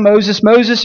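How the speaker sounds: ordinary delivery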